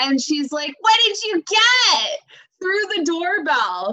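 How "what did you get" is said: booming, high-pitched scream. Retelling how mom yelled through the doorbell on arriving home; retelling a booming scream. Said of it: "this booming voice because my mom screams".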